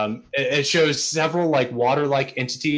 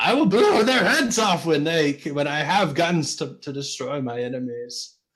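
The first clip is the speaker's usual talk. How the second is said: hammy, over-the-top, swooping delivery. Narrating a game, voicing a character speaking to the player, very exaggerated delivery. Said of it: "says in a very exaggerated way".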